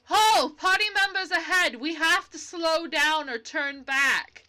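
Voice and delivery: loud, high yell, calling out. Joan calls out to the group in the freezing cold, yelling over the wind. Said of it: "she's she's struggling, / [name] (DM/[name])".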